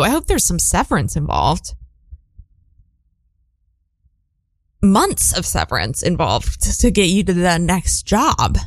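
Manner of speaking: fed-up, heated, frustrated, exasperated tone. Responding to someone whose workplace closed unexpectedly, frustrated. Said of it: "Sorry, I'm frustrated".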